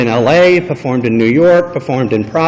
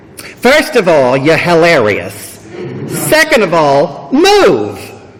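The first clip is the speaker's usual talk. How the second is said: put-on Brooklyn accent, swooping and animated; 3 semitones higher than usual. Retelling what an actress and comedian said to the speaker after a show: Brooklyn accent. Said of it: "in her Brooklyn accent said".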